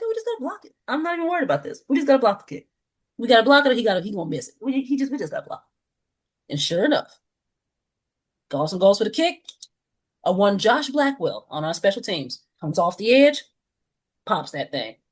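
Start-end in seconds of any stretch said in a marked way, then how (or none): 0.0-6.5 casual, unworried, nonchalant, sing-song tone. Retelling watching a field goal try from the couch: imitating own nonchalant remark. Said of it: "I said it so nonchalantly".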